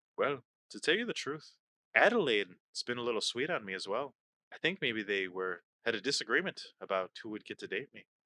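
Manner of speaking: hushed whisper. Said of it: "he whispers to you".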